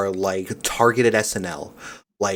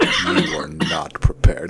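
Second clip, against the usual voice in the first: drawn-out, slow, creaky, rasping, pitched-up character voice; 6 semitones higher than usual. Quoting a game character who starts slow: imitating a slow character line. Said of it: "'Cause he starts slow".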